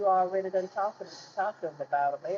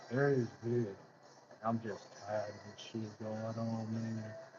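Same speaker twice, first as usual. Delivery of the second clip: much lower, slow, mock deep bass voice. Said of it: "they need to put some bass".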